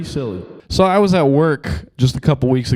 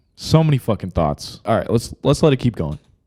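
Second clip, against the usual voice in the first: ordinary talk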